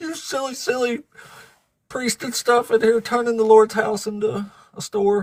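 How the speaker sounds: high, put-on tearful, furious, crying angry voice. Retelling Jesus scolding people in the temple: imitating Jesus angry and crying. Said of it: "he's still crying".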